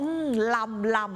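Northern Thai word lam, drawn out slowly, savoring.

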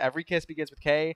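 ordinary talk, nothing marked

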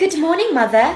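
horrible fake British accent. Greeting her mother in the morning, in a horrible british accent. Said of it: "why do I have a horrible British accent?".

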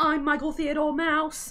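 high, loud, squeaky cartoon voice. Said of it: "there's the Mickey Mouse guy. Like, he does that voice".

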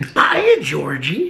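sinister, creepy clown voice. Recalling what they said, the speaker does a Pennywise voice. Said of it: "Why do you sound like him?".

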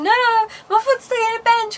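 play-acted, high, tearful sobbing crying voice. Retelling what she told her mum when her mum turned up, imitating being in tears. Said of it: "I was just like in tears".

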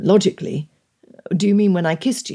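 ordinary delivery, nothing marked

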